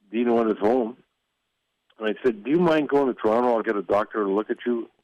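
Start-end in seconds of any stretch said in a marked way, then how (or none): none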